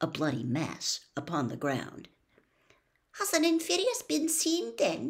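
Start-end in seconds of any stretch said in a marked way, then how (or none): 3.2-5.1 very high, piping, high-pitched voice. Narrator reading a scene with Snape; Parvati Patil speaks, high-pitched. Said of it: "in a high-pitched voice".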